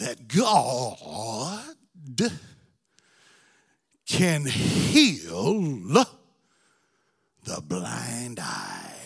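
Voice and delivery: very low, sing-song, swooping preacher voice. Asking the audience the question one more time; preacher voice. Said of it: "I'm going to use my preacher voice".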